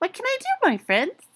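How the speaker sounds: tiny, very high, squeaky mouse voice. Reading a mouse queen asking her friends a question: squeaky little voice. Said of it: "in her squeaky little voice".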